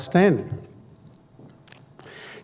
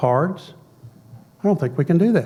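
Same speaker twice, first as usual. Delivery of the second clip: normal talking voice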